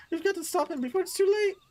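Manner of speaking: very high, cartoonish character voice. Reading dialogue lines aloud: Shaggy voice. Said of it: "I don't know why I did a Shaggy voice there".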